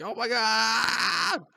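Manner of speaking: very high, very loud, shrill, panicked goblin shriek. Voicing a goblin whose buddy was just cleaved in half: goblin screaming in panic. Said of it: "he's screaming like".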